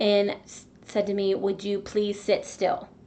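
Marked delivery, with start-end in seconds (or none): 1.3-2.8 mock-stern, imitated stern voice. Speaker recalls a man telling them off for ticking, retelling a stern rebuke. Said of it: "with a very, very stern voice".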